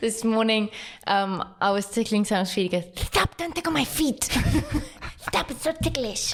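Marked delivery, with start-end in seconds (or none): 3.0-6.3 high-pitched voice, words mushed together, heavy lisp. Telling a story about tickling Sam's feet this morning, imitating Sam's retainer voice. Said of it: "That retainer impersonation makes me laugh".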